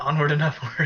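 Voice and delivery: whispering. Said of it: "You have to whisper it too".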